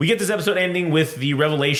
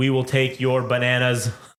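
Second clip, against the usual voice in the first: put-on deadpan, haunting villain voice. Imitating the English dub villains, deadpan voices. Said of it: "they are deadpan".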